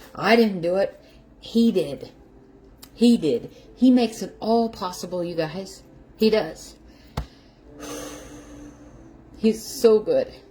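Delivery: weeping, tearful, crying through words. Talking live to her viewers, crying while talking. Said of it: "as I'm crying over my egg sandwich".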